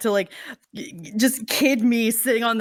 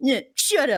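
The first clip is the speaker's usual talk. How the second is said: acted-out snotty, bratty retort; 3 semitones higher than usual. Retelling a running joke with friends: imitating a bratty answer. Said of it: "like, bratty answer of just".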